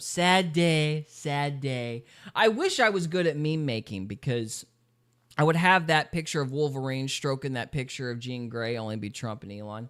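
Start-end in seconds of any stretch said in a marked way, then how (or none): 0.0-2.0 very slow, every word stretched out, politician voice. Doing a Trump impression of a quoted line: Trump impression. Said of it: "I'll do Trump".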